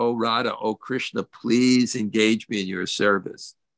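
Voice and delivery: ordinary talk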